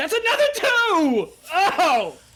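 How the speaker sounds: delighted yell, high and loud.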